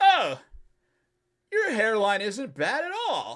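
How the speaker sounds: very high, sloppy, slurred drunk voice, acted. Retelling what a woman said while touching the speaker's head; imitating drunk slurring. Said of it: "she's like slurring her words".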